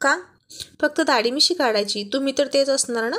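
ordinary delivery

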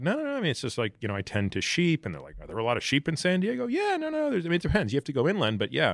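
high, breezy, evasive, offhand voice.

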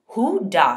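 harsh demanding tone. The officer puts a question to the group, harshly. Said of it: "he asked harshly".

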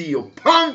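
loud, high-pitched, angry yelling outburst.

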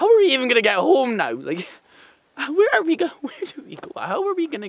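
high, swooping, full-on panic. Acting lost on a mountain, answered with calm down: panicking. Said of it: "Just calm down".

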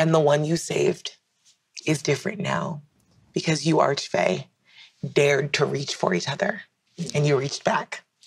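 emotional, halting voice, choking up, breaking mid-phrase. Closing a story for listeners, getting emotional. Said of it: "And I'm getting emotional".

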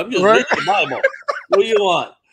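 mock pissed-off, put-upon, irritated, with swooping pitch. Retelling how the other speaker answered someone asking what he was doing, mock pissed-off tone. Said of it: "You sounded like you were pissed off".

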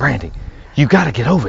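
put-on whisper. Speaker retells John calling her from his kitchen phone, imitating John whispering. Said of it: "But he's whispering".

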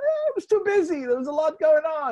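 very high, loud voice with swooping pitch. Retelling a comic book line, Larry David voice. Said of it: "you could almost hear Larry David's voice".

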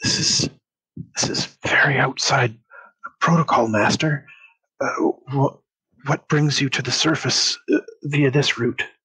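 whispered aside, hushed. A game narrator voices a character leaning in close to speak privately: whispering. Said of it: "he leans in really close and whispers".

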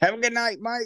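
very high, tipsy, friendly shout. Retelling calling goodnight across the street: imitating own past yelling. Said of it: "yelling across the street".

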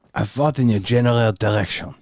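put-on French accent. Quoting a French character from a movie, in John Cleese's fake French accent. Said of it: "impersonating a French person from Holy Grail".

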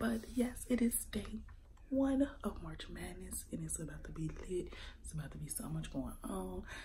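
hushed whisper. Speaking on day one of March Madness while people sleep, whispering. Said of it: "I am whispering because it is 4 a.m".

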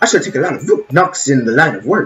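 failed attempt at an old-professor voice. Voicing a character's line: bad E. Gadd impression. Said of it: "I cannot do e.gadd voice".

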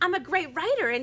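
ordinary delivery, nothing marked

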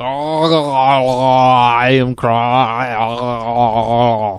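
talking through a mouthful, with drawn-out "I". Answering what Krog sounds like: Krog voice. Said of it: "He sounds kinda like".

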